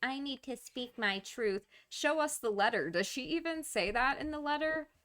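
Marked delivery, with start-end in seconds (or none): 0.0-1.7 mock petulant childish voice, much higher. Speaker mocking how someone made a woman sound, mock petulant child voice. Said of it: "infantilizing her with this voice, making it sound like she's a fifteen year old petulant child".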